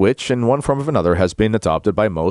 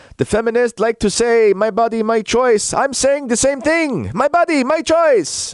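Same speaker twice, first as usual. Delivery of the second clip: very high-pitched, slow put-on French accent; 14 semitones higher than usual. Retelling what he said at a rally: imitating a French accent. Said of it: "he's got his French accent".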